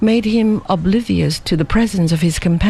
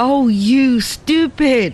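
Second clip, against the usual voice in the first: blurted exclamation, pitched up; 7 semitones higher than usual. A girl answers a puzzled man, exclaiming. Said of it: "exclaimed the girl".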